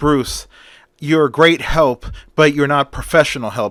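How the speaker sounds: plain reading voice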